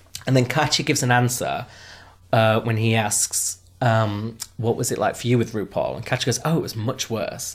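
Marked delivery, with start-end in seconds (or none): 6.5-7.6 put-on sarcastic deadpan. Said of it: "she's been sarcastic and deadpan".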